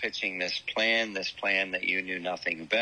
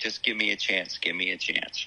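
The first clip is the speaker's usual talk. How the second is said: imitated desperate, begging tone. Retelling a show scene where a kid begs Oz: imitating someone begging. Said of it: "begging him".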